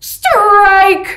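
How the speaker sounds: high, loud umpire-style yelled call.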